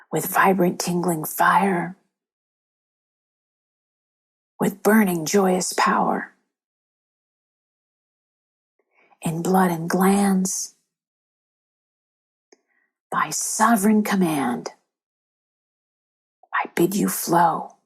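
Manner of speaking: whispered. Leading a group through the affirmation again: whisper. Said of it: "now we'll do it in a whisper".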